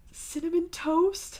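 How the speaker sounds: shrill, distressed high-pitched cry. Told the dog's name, a character asks it back in a high-pitched distressed tone. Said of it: "Dave asks in a high-pitched tone of distress".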